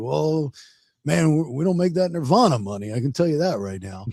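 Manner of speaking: modest, humble, matter-of-fact, low-key tone. Retelling a remark about money, imitating Brad humbly. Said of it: "in that Brad way".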